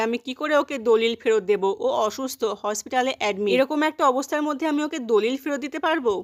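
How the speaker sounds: plain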